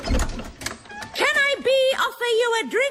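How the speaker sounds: very high, irritating put-on witch voice. Talking to a visitor at the door, in a witch voice. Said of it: "can you stop talking in that voice".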